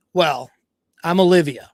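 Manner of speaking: put-on snide tone. Retelling a woman introducing herself to Jake: imitating a bitchy tone. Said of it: "Her real bitchy".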